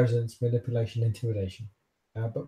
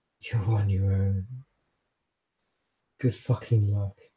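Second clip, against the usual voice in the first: whispering; 2 semitones lower than usual. Voicing a character who crawls up and speaks to a player: whispering. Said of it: "she sort of whispers to you and goes".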